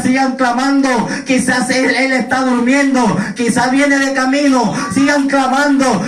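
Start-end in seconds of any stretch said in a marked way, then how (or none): none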